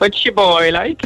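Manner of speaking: clumsy, very high-pitched bad Cork accent. Told to try anything ending in boy or like; bad Cork accent. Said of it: "Try it anyway".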